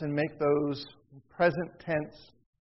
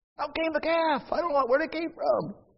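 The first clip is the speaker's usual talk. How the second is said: put-on high, sing-song childlike voice; 11 semitones higher than usual. Reading a passage aloud, the speaker switches to a childlike voice. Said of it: "I have to read that as like a child".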